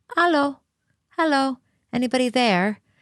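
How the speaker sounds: tiny, timid, very small high voice. Retelling how she crept up to the fence and called out, very small voice. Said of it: "in a very small voice goes".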